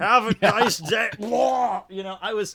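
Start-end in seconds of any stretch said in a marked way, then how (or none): 0.0-1.1 mock drunk voice, higher and louder. Joking about not being drunk at the register: mock drunk cashier. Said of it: "I wasn't getting plastered at the register".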